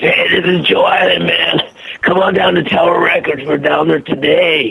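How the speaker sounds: harsh, gruff voice. Demonstrating a voice from radio spots the speaker did: gruff Joe Island voice. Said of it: "Joe Island had a gruff voice".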